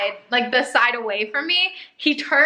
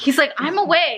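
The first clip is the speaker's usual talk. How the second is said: ordinary talk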